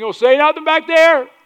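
high, loud, angry yell. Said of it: "they're yelling out".

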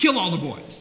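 ordinary delivery

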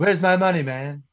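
put-on high-pitched cartoon baby voice. Among friends quoting Family Guy, redoing the line more accurately: Stewie impression. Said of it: "that was more accurate".

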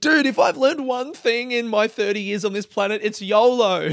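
fake heartfelt earnestness. Mocking their own big speech by acting it out: mock-earnest. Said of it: "Just a guy really earnestly saying".

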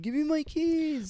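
mock very high, drawn-out yell. Retelling a film scene where a character yells for his keys: imitating someone yelling. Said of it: "he's yelling about his keys".

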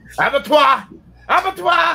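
annoyed, irritated, very high-pitched voice. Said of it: "You have to say it with, like, like you're annoyed".

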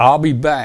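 put-on firm, very stern tone. Retelling what the woman at the car window said: imitating a stern voice. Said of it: "she said it very stern".

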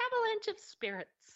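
put-on small child's voice, pitched very high. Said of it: "that same little kid's voice said".

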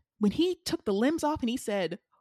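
plain

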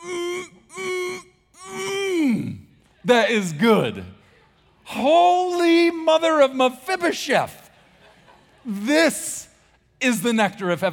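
very high, very slow, drawn-out, dramatic rapturous delight. Showing the sound made when ice cream goes in the mouth: dramatic savoring delight. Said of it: "you're gonna hear a sound similar to this".

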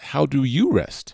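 stress on "you".

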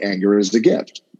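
ordinary talk

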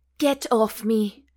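said with a gasp. Reading a romance novel aloud, a character pushing him off: gasping. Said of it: "Fiona gasped".

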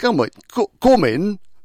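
very high, loud, put-on Welsh accent. Retelling how a homeowner invited the visitor inside, in a Welsh accent. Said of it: "In his Welsh accent".

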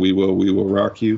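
normal talking voice

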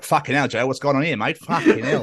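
put-on Australian accent. Warning the other speaker he might pick up their accent, mimicking an Australian accent. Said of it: "If I start being like".

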